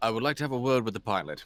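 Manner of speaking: put-on fast, heavy English accent, laid on thick. Roleplaying a character who asks to speak with the driver, thick english accent. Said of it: "I have a very thick English accent".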